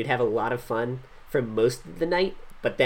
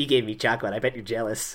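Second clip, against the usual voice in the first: mock, self-satisfied, smug little gloat. Retelling how a character brags after getting chocolate: imitating a smug character. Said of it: "turns to Ryoma and is all smug".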